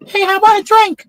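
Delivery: loud, squeaky, very high-pitched little voice. Telling a joke, voicing the guy who walks up to the bar: really high-pitched voice. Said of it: "the guy has a really high pitched voice".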